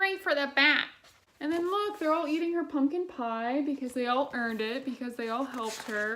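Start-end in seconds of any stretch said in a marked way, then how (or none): 0.0-0.9 nasal witch voice, higher. Recalling a story cassette, the speaker repeats the witch's line in a nasally witch voice. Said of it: "really nasally, really good witch voice".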